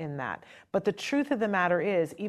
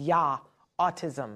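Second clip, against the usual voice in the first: imitated German accent, put on; 3 semitones lower than usual. Recalling the day of a child's diagnosis, the speaker quotes the doctor: put-on German accent. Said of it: "had a very German accent".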